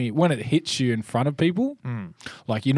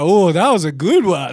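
put-on sounds like an old auntie; 6 semitones higher, 9 dB louder than usual. Retelling doing squats as a lady checks on them, old auntie voice. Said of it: "You sound like an old auntie".

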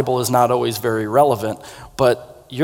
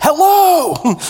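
put-on tiny, shrill, very high, drawn-out kid yell; 6 dB louder than usual. Retelling how a four-year-old yelled at diners: imitating a child yelling hello. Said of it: "when he yelled at them".

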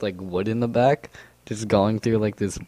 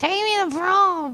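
put-on flamboyant voice, higher. Imagining what a flamboyant boyfriend would demand: imitating a flamboyant boyfriend. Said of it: "if you have a flamboyant boyfriend".

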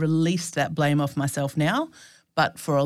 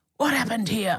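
mock cross, indignant outburst, high-pitched and angry; 6 semitones higher than usual. Retelling a man's reaction to a detailed anatomy report, imitating a cross man. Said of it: "And he was so cross".

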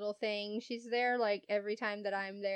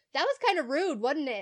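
loud, high-pitched raised voice meant to carry; 5 semitones higher, 8 dB louder than usual. Retelling speaking up as customers who ignored the cashier walked off; retelling a loud remark. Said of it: "I loudly go".

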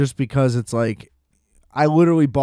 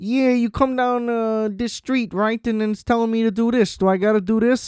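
put-on Chicago accent, pitched up; 9 semitones higher than usual. Imitating a guy in the story, Chicago accent. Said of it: "the most Chicago guy of all time".

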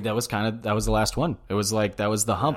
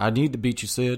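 Texan cartoon dad voice, higher pitch; 2 semitones higher than usual. Retelling a rival's vow to beat Sid, Hank Hill voice. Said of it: "I don't know why I just turned into like".

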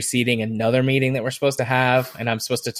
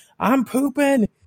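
very high, called-out yell; 13 semitones higher than usual. Retelling what a client said about herself: imitating someone yelling. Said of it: "I'm pooping and I'm yelling".

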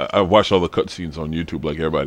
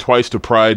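usual speaking voice

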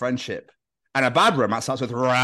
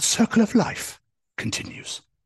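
wildlife documentary narrator voice; 9 semitones higher than usual. Narrating a kitchen scene as a nature documentary: David Attenborough voice. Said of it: "In a David Attenborough voice".

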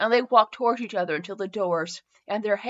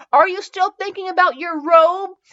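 incredulous, disbelieving voice, raised and pitched up; 8 semitones higher, 7 dB louder than usual. He asks her incredulously as she calls for his robe. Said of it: "he asked incredulously".

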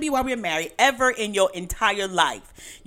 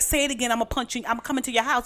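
put-on heated, angry tone; 4 semitones higher than usual. Retelling her own reply to her son: retelling her own threat. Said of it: "I be like".

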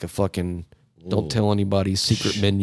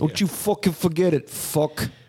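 put-on mafia tough-guy voice, higher pitch; 9 semitones higher than usual. Acting out mafia guys demanding money to let someone play: imitating how mafia guys talk. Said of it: "that's what mafia dudes talk like".

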